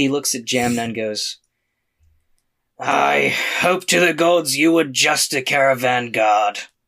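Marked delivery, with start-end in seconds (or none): 2.8-6.6 slow, drawn-out, rough, gravelly orc rasp. Narrating the scene, the storyteller voices an orc sizing people up: gravelly orc voice. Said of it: "sometimes the gravelly voice takes a lot out of me".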